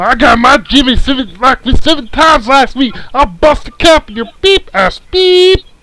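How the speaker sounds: very high, loud cartoon voice. Redoing another speaker's line properly, in the voice: Fat Abbott voice. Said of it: "You're supposed to have the voice".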